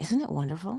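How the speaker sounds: breezy, light, airy, eager lift. Comparing two deliveries, the speaker asks listeners to feel this light, airy and eager one. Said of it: "Feel how light and airy that is and how eager you want to be".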